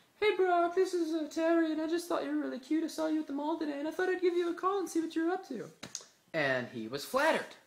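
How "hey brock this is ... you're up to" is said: put-on pitched very high and girly. Prank-calling Brock while posing as a girl named Terry, Terry's girl voice. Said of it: "I could do a very pretty good girl voice".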